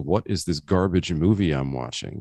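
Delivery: normal talking voice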